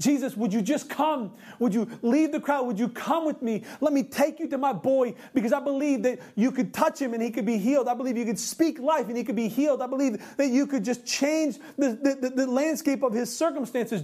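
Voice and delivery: desperate, begging cry, pleading with everything. Retelling the Bible passage, voicing the official begging Jesus to heal his son: acting out begging, crying out. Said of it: "he's begging, he's crying out, he's pleading".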